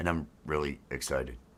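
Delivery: deadpan, very low, very quiet, flat bored monotone. Teasing the other speaker, mimicking their boring flat delivery. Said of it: "the most boring way I've ever heard".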